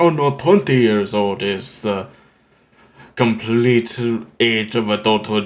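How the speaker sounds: fake, mock Russian accent. Voicing someone from a nation with a different age of adulthood, in a put-on Russian accent. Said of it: "I put on a Russian accent".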